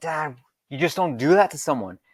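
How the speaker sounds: put-on, livid, furious, angry yelling. Retelling how they reacted when their dad took them off belay: retelling yelling at dad. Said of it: "I was just yelling at him".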